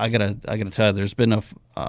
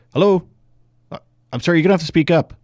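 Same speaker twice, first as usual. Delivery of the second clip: fake put-on voice, pitched higher; 8 semitones higher, 4 dB louder than usual. Retelling an answering-machine prank on callers: retelling own fake voicemail greeting. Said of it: "It'd be like".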